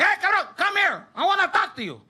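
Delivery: very high-pitched yelling. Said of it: "he yells at me".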